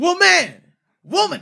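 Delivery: very high, loud yell, stress on w of woman. Showing how to say it right, yelling 'woman', stressing the W. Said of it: "you're like fucking cutting the the sound quality".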